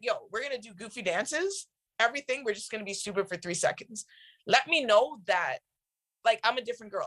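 normal talking voice

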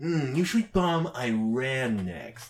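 slow delivery with the word "Iran" drawn out. Acting out a sitcom scene: Trump impression. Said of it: "And Trump's like".

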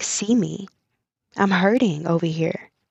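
ordinary talk, nothing marked

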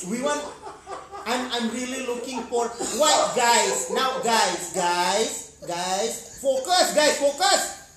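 put-on Filipino accent. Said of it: "Farouk in his, uh, Filipino accent".

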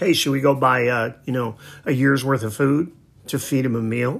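plain

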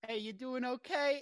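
put-on 1920s Chicago gangster accent. Retelling an anime shop scene, Firo's Chicago gangster accent. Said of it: "he just throws a Chicago accent on it".

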